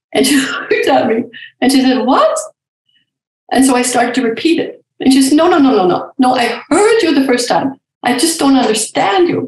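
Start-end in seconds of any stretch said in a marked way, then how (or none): 5.3-9.4 put-on lovely, lilting Swiss accent in English. Retelling how a woman reacted to the speaker's story about crying, imitating Elizabeth's Swiss accent. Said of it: "she says it in her lovely Swiss accent".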